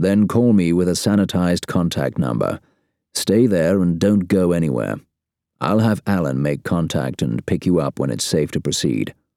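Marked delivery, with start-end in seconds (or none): none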